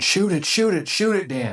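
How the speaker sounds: very high, desperate, urgent screaming. Retelling urging another hunter to shoot a deer: retelling own scream. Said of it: "So I'm screaming".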